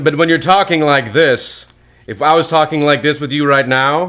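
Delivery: loud, high, projected theater stage voice. Showing the others how a theater voice sounds in normal conversation: loud theater voice. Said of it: "Theater voices are very loud".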